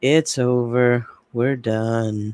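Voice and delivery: put-on defeated, very slow, "done" stretched out. Discussing a recording, the speaker mimics how Chad sounded; imitating Chad sounding defeated. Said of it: "Chad just sounds utterly defeated".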